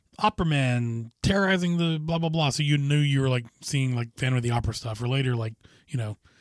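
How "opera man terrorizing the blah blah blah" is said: ordinary delivery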